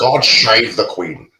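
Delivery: put-on Scottish accent. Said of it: "with the Scottish accent".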